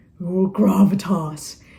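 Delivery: very deep, solemn, weighty intoning voice. Explaining latin jargon, speaker says the word gravitas in a very deep voice. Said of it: "you have to say it in a very deep voice".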